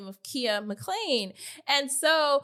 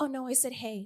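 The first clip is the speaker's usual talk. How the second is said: mad, very soft-spoken, hushed voice; 6 dB quieter than usual. Retelling how a man greeted her, imitating a soft-spoken voice. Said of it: "mad soft spoken".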